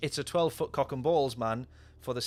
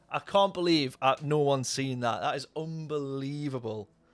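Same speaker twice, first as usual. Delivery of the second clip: usual speaking voice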